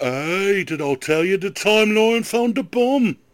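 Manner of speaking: unhurried, slow, drawn-out voice. Imitating Neil telling about the bomb: Neil impression. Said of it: "Is that your Neil impression?".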